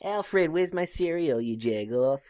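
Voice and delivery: put-on New York accent. Playing a character calling to alfred during a bit, in a new york accent. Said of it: "It's like fucking New York accent".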